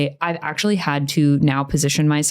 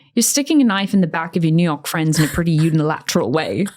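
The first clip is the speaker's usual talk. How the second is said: put-on British accent. Retelling a remark someone made, British accent. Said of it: "This one was said in a British accent".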